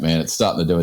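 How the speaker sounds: ordinary talk, nothing marked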